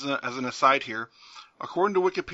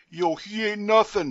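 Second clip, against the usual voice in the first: put-on thick New Jersey accent, pitched up; 6 semitones higher, 3 dB louder than usual. Recounting how the supposedly mysterious Mortis was heard in the ring, imitate Mortis in a thick New Jersey accent. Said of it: "in his thick New Jersey accent".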